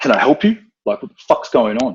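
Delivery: blunt, straight-up confrontational, in-your-face tone. Retelling confronting intruders at the door: imitating saying it bluntly to their face. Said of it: "straight, like, in their face".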